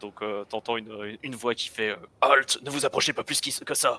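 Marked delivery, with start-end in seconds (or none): 2.2-4.0 commanding, imposing soldier voice. Describing the voice heard from the powered armor, impressive voice like the series. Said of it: "cette voix comme il y a dans la série très impressionnante".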